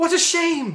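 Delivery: high-pitched angry sigh. Reading a story aloud, voicing the Dodecahedron's line as an angry sigh. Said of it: "That didn't sound like a sigh at all".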